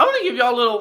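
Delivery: voice breaking and cracking upward mid-phrase. Starting to give the audience a medical lesson, voice cracking. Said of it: "that voice crack".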